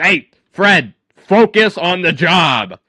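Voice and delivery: very loud, slow, drawn-out barked yell. Voicing an officer who yells at a laughing colleague: officer yelling at a colleague. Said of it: "looks over and yells at the guy".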